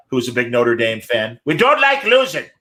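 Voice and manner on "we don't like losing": put-on high Irish priest voice with Irish accent.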